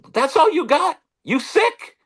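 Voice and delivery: very high scream. Retelling a handshake with a young player: imitating Willie Mays screaming. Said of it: "Mays screams out in his voice that we all know".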